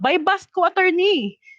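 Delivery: high-pitched yelled call.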